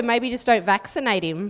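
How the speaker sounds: normal talking voice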